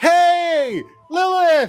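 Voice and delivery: very high yelled hey, stretched long. Voicing the sister who waves at her twin: yelling a greeting. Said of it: "proceeds to give a giant wave and yell".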